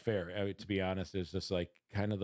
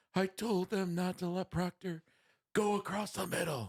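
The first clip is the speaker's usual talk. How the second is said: shrill, very high-pitched screaming rant; 10 semitones higher than usual. Retelling what a fan beside them screamed at the game: imitating Uncle Fister screaming. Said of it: "he's screaming and he's like".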